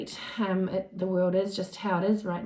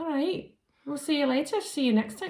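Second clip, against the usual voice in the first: terrible, higher-pitched put-on Scottish accent; 7 semitones higher than usual. Saying goodbye to listeners, falling into a terrible scottish accent. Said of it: "my terrible accent".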